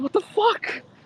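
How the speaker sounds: exaggerated, high-pitched, baffled outburst. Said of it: "I was like".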